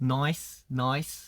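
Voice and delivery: Australian accent on nice, sounding like noise. Showing how to say nice the Australian way, Australian-style nice. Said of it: "나이스를 이제 호주식으로 하면은".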